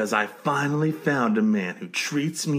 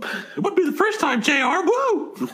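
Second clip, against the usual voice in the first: put-on wrestling commentator voice, higher. Bantering about a wrestling match in a Jerry Lawler impression. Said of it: "my Jerry Lawler impression".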